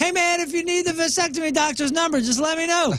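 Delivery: high acted yelling. Retelling a loud remark to a departing doctor after surgery: imitating himself yelling. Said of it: "I was yelling to the doctor".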